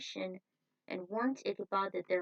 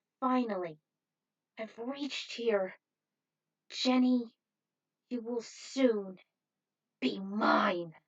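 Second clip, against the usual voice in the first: rasping, scraping, raspy raised voice; 3 semitones higher, 5 dB louder than usual. Reading a story aloud, a character arriving in Sleepy Hollow: raspy voice. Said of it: "In a raspy voice".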